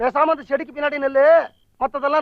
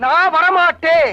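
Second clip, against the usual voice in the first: shouting, louder; 2 semitones higher, 5 dB louder than usual. Asked to come inside, a character refuses, shouting. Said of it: "ஏன் இப்படி கத்துறீங்க?".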